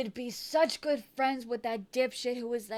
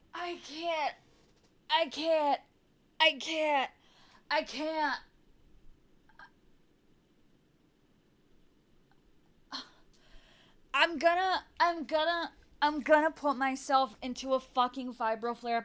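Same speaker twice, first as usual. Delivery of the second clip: shaking-mad, furious, unstoppable outburst; 4 semitones higher than usual. Reacting to news that a man has been having an affair, furious. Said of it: "I'm so mad I can't stop shaking".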